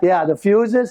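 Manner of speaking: ordinary talk, nothing marked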